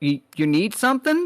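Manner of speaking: high voice, talking through a mouthful of food. Voicing a character interrupted while eating: mouth full while talking. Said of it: "with her mouth full, she goes".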